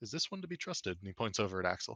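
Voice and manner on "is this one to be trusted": quiet, confidential, hushed, lowered voice pitched up. Role-playing a character asking whether another can be trusted: lowered voice. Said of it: "he sort of like lowers his voice".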